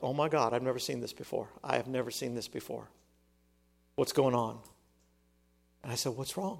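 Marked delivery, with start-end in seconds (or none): 0.0-4.6 mock-tearful, quieter, put-on crying voice. Speaker recounting what a woman said as tears ran down her face, retelling her crying words. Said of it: "tears started rolling down her face".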